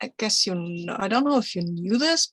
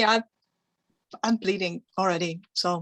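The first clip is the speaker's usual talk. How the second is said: ordinary talk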